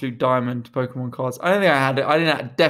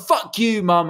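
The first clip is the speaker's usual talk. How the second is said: high, pitched-up, loud shout; 7 semitones higher than usual. Retelling answering a mum who said stop swearing: retelling own childhood shout. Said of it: "I'd shout".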